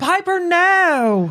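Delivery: over-the-top campy delivery, high, drawn-out "no". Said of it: "do it even gayer".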